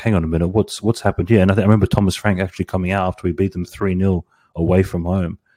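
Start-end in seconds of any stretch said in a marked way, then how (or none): none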